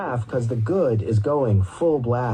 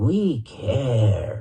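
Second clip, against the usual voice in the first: voice made to sound bird-like. Narrator reads Scotty's reply at the table: bird-like voice. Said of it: "making his voice like a bird".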